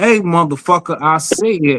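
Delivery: stern, strict, parent-like tone. Retelling checking the kids at home: imitating scolding own kid. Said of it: "I be like".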